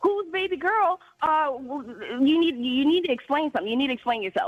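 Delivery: boiling-mad, furious, flying-off-the-handle screaming. Retelling confronting a partner over a phone device name: imitating own screaming. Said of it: "I start screaming at him".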